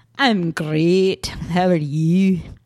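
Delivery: put-on accent drifting toward Scottish. Co-host repeating a greeting to the other host, accent sounding almost scottish. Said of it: "that was almost like Scottish for a minute".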